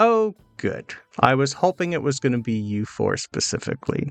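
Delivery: villain voice speaking through a chuckle. Narrating to the players, the villain greets the four unmasked people as a chuckling villain. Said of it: "you just hear the chuckle".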